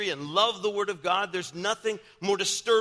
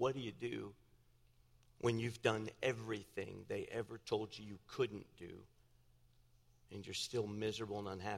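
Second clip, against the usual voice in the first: put-on tearful crying voice, lower and quieter; 10 semitones lower, 14 dB quieter than usual. Retelling a young man's late-night phone call: imitating someone crying. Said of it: "he was crying".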